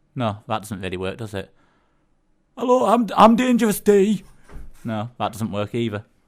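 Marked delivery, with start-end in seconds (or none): 2.5-4.2 put-on lisping Bradford accent. Impersonating an absent co-host: imitating Dangerous D, deep Bradford accent with lisp. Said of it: "a kind of deep Bradford accent with a bit of a lisp".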